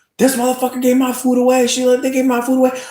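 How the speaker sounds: acted, very high-pitched, shrill, loud full-on screaming. Retelling how she was screaming on the screen: imitating someone screaming. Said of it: "She was just screaming".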